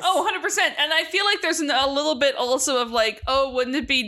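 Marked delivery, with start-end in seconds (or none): none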